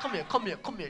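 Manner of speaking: commanding bass voice.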